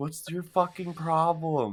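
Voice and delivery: quiet, hushed inside voice. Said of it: "Inside voice".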